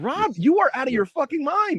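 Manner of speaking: upset, very high-pitched outburst. Talking with a co-host about GQ interviews, upset. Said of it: "You sound kind of upset".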